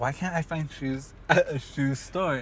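plain

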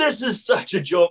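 angry outburst, very high-pitched. Retelling answering the judge's warning: retelling an angry remark. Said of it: "I kept on getting mad".

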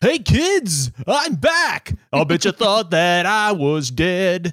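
loud, high, zany, goofy clown voice impression. Talking about who a guy sounded like, doing the Billy Madison clown impression. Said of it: "he sounded like the clown from Billy Madison".

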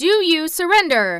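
very loud, high, forceful, insistent voice. Narrator reads the king confronting the scarecrow's side, demanding. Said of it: "Demanded the king".

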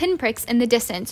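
ordinary delivery

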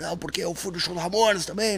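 put-on hoarse voice. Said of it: "Com a voz rouca".

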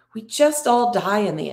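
ordinary delivery

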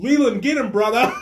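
put-on bounty hunter voice, yelling. Imitating Dog the Bounty Hunter yelling at his partner: imitating Dog the Bounty Hunter yelling. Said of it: "Dog just yelling".

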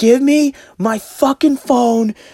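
very high, shrieking, drawn-out scream. Retelling the neighbor banging on a door: imitating a woman screaming. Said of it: "She's banging".

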